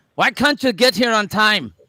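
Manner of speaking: put-on jumbled blend of Irish and Scottish accents. Quoting someone asking why a guest is late: put-on Irish-Scottish accent. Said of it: "That's Irish".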